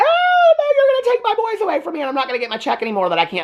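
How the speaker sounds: high, frantic, swooping outburst, losing control. Retelling a movie scene, the mom's words: imitating someone losing it. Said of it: "the mom's, like, losing it".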